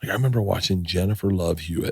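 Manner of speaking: hushed half-whisper under the breath. The speaker, discussing celebrity friendships, recalls watching a celebrity, half-whispering. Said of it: "I don't know why I'm whispering".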